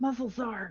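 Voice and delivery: hushed whispering voice. Speaking as Kelly to Renard during play: whispering. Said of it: "Kelly whispers to Renard".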